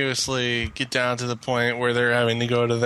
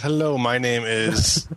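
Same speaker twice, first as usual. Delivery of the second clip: definite put-on American accent. Joking about car call centers, voicing a call center worker with a definite american accent. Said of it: "A guy with a definite American accent".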